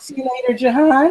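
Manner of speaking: voice breaking partway through the line. Signing off the show, the host says goodbye to the other speaker, voice cracking. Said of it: "My voice crack".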